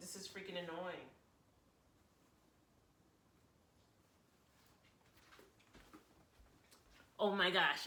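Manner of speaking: voice near tears, holding back crying. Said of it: "say this without crying".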